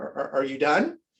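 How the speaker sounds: play-acted nervous, hesitant stammer repeating are. Retelling how a restaurant manager asked if he was done: imitating a nervous manager. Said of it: "he kinda looked at me nervous".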